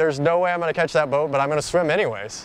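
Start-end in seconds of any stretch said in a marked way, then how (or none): none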